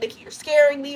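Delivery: mock frightened, high, scared screaming. Recounting a story's plot, the speaker acts out a character screaming. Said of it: "He's screaming".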